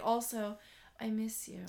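very hushed, very soft, slow and unhurried. Retelling what he said at the end of the conversation: imitating someone speaking quietly. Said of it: "very quietly".

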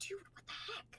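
sharp whisper through clenched, gritted teeth. Retelling what a companion said to whoever was nearest the door, whispering through teeth. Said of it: "through her teeth, just whispered".

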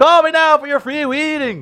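shrill, booming bad Jamaican accent, loud and high. Claiming to be able to do accents, jamaican accent. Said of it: "I can do a Jamaican accent".

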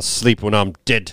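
put-on Australian-sounding accent. Quoting a villain's line, sounding Australian. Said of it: "it was more Australian".

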